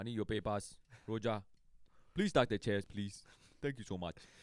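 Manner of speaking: put-on Ghanaian accent. Imitating a man from Ghana talking to Roger, with a thick Ghanaian accent. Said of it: "Roger does a great impression".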